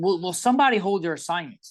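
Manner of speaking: fed-up shouting voice. Retelling yelling at the offensive line from the stands: retelling yelling like a coach. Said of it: "yelling at the offensive line like I'm their coach".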